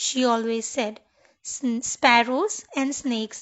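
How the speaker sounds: ordinary delivery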